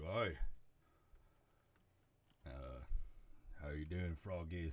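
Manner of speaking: rough, gruff, grunting thug voice. Game master voicing a heavy at the door greeting the players, grunting. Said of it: "the man grunts at you".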